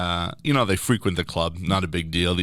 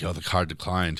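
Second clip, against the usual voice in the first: put-on whisper; 4 dB quieter than usual. Retelling quietly telling the guys the card declined: imitating a whisper. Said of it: "So I whisper in".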